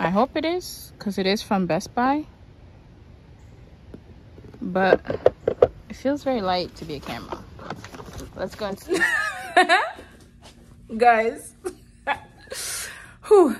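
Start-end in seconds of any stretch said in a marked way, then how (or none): 11.0-13.6 laughing through tears. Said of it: "I don't know I'm crying".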